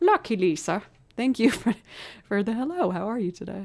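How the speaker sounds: terrible put-on Irish accent. Streamer thanking a viewer for the hello, in a terrible irish accent. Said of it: "That was a terrible Irish accent".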